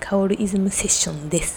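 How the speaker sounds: hushed whisper with no voice.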